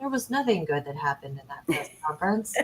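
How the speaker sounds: deep, dramatic narrator voice with big pitch swoops. Recounting a press conference, speaker switches to his Keith Morrison voice. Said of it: "I'll do it in my Keith Morrison voice".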